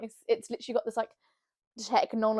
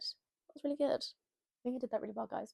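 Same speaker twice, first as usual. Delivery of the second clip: soft, hushed, odd put-on voice. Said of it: "Why am I speaking in this voice?".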